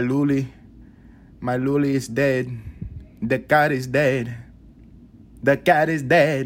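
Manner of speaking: put-on strong, high, slow Spanish accent. Retelling grandma calling out about the dead cat, imitating grandma's Spanish accent. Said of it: "more Spanish accent".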